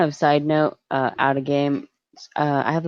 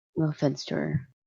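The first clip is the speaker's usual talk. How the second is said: hushed whisper, much quieter; 7 dB quieter than usual. With a woman just gone off, the speaker keeps talking while whispering. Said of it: "I'm whispering this".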